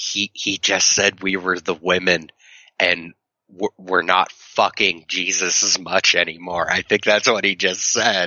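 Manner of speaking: mock, put-on whisper. Retelling leaning over to someone during a church service: imitating own whisper. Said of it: "Please stop whispering".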